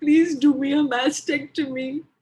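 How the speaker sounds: put-on pleading voice. Retelling begging the doctor on one's knees: retelling own begging. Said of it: "I begged him".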